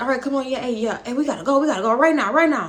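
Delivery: fast, rushed, urgent speech with words tumbling. Retelling how someone hurried everyone into the car: imitating someone rushing people. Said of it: "trying to, like, rush us in a car".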